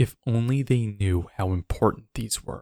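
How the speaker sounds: reading in a dark, ominous tone. Reading aloud an online comment about stone chambers in an ominous tone. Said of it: "Now, this is ominous".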